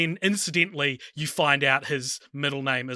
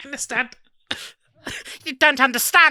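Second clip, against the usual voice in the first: put-on British accent, very high-pitched; 11 semitones higher, 4 dB louder than usual. Repeating a line someone says that sounds funny to them: British accent. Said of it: "The British accent, baby".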